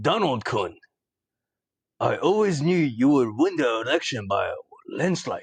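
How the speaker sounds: in-character, put-on Japanese-sounding voice. In a comedy bit opposite a friend playing Trump, Shinzo Abe impression. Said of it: "I'm Shinzo Abe".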